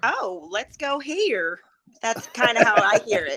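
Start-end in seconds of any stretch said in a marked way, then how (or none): 0.0-1.6 very slow, high North Carolina drawl. Imitating how a friend from north carolina talks: north carolina accent impression. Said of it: "one of my friends is from North Carolina".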